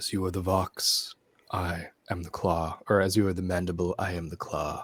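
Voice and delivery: very low put-on voice. Describing hooded, cloaked figures, voicing their lines in a very low voice. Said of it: "one of those very low sounding voices like this".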